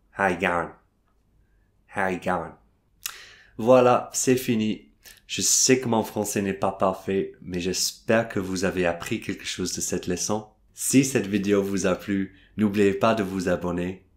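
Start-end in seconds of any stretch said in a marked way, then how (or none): 0.2-2.5 Australian accent. Speaker demonstrating English greetings in a French lesson video, Australian accent. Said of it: "Avec un accent australien".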